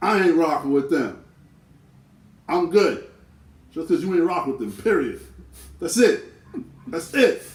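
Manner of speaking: high, loud, heated outburst. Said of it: "sometimes it's like".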